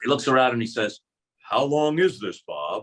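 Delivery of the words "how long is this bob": heavy, big, slow rumbling voice of a giant. Retelling what a giant movie bad-guy actor asked him, in a big rumbling voice. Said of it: "he says in this big rumbling voice".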